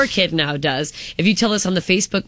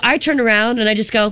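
ordinary talk

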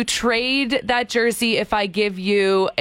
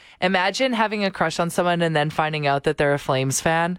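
ordinary talk

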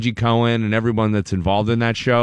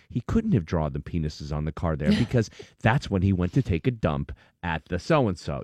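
put-on low, grave, dead serious tone; 5 semitones lower, 7 dB quieter than usual. Imitating how characters on a show talk: imitating a very serious tone. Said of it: "in a very serious tone".

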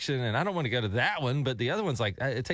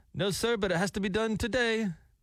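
put-on non-American foreign accent, pitched up; 9 semitones higher than usual. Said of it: "he doesn't have an Americanized accent".

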